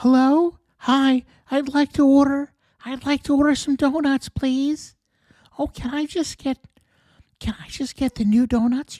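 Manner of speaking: put-on cutesy, high, childish baby-talk voice. Imitating how she orders donuts: childish baby voice. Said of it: "her baby voice is just".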